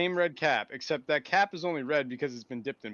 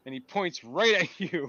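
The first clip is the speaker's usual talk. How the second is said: ordinary delivery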